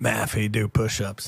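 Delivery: plain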